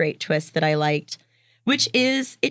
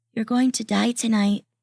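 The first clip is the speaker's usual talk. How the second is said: put-on eerie, ominous horror-movie little kid voice; 5 semitones higher than usual. Retelling a creepy kid's warning on a stormy walk: imitating a creepy horror-movie kid. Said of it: "like a creepy fucking horror movie kid".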